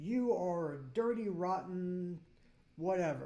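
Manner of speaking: ordinary delivery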